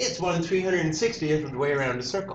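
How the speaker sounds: usual speaking voice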